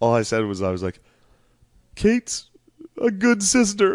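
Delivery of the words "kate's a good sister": mock choked-up voice, higher and louder. Retelling a wedding speech line about a sister: imitating own choked-up voice. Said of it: "'cause I was getting choked up".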